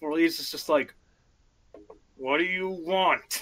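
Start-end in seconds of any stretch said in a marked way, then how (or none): 2.2-3.4 words forced out through tightly clenched teeth. After an apology, the speaker retells a character's reply through gritted teeth. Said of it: "through very gritted teeth".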